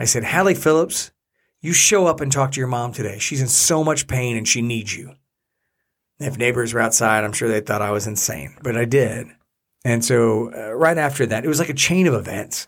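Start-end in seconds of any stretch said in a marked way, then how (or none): 0.2-5.1 play-acted fierce, forceful, commanding, aggressive angry voice. Retelling words said while looking up at the sky, in an aggressive voice. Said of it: "in my aggressive voice".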